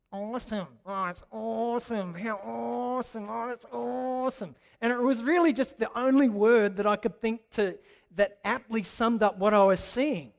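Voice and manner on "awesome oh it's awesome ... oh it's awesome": put-on annoying, nasal, drawn-out Australian accent. Retelling his own reaction heard on a video, in an annoying nasally aussie accent. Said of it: "my voice in that kind of annoying, nasally Aussie accent going".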